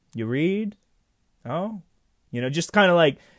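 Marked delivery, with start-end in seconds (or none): 0.1-0.7 dry, quizzical, offhand wry tone. Retelling a film scene, imitating Peter Falk's wry questioning. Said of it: "this kind of, like, wry questioning".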